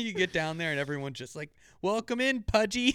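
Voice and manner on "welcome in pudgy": very high, put-on, effeminate feminine voice. Imagining how everyone in hell greets the listener, the speaker uses a put-on feminine accent. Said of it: "What's with the feminine accent?".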